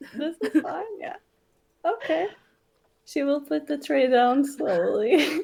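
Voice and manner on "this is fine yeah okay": forced, put-on calm, slightly high pitch. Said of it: "Tavi's like the dog where everything else is on fire".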